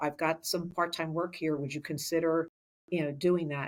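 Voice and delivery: ordinary talk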